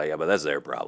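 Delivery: plain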